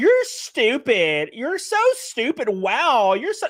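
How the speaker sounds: high, swooping, drawn-out, mocking Valley Girl voice. Retelling Destiny's reply to Ben Shapiro: Destiny in screaming Valley Girl accent. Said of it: "screaming like you're in, in this weird Valley Girl accent".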